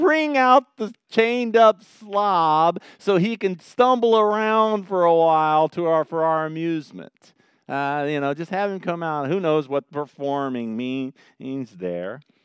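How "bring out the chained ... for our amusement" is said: high, loud, slow jeering crowd voice. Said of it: "So they say".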